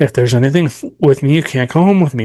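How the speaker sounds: very strict, stern, firm, no-nonsense tone. Showing how to tell spirits not to follow: saying it very strictly. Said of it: "You just wanna say very strictly".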